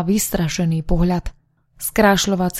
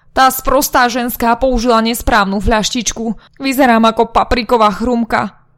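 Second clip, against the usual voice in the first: furious, huffing, angry, higher and louder; 4 semitones higher, 3 dB louder than usual. A woman wiping her face complains about another woman's mistake, furious, huffing. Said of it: "zúrivo utierala tvár a zlostne fučala".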